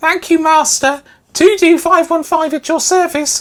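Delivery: very high, loud house-elf voice. Reading aloud a powered-up service droid's thanks: Dobby the house elf voice. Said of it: "Sounds like Dobby the house elf the way I read it".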